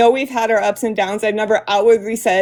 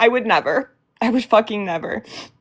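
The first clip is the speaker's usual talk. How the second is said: upset, choked up, near tears. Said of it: "I'm done crying about that".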